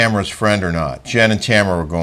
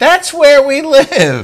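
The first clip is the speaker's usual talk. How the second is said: play-acted, very high, sing-song, swooping, drawn-out shout; 5 dB louder than usual. Retelling a funny moment when Gina shouted: imitating Gina shouting. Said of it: "Gina shouts out".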